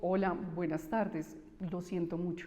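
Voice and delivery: somber, solemn, consoling tone.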